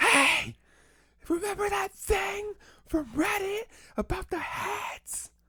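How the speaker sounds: loud, high-pitched stage whisper. Showing the other speaker how loudly they can whisper, loud whisper. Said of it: "this is my loud".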